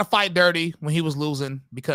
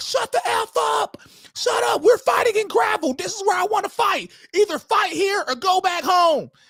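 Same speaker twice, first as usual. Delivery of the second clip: mock furious yelled tirade, very high pitched; 3 dB louder than usual. Recounting what a man who wanted to fight in gravel yelled, retelling an angry yell. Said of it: "he started yelling like".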